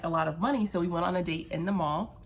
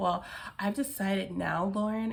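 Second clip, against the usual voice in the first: mock voice of a 16-year-old boy. Recounting confronting him, she mimics his reply in a 16-year-old voice. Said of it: "in his very like 16-year-old voice".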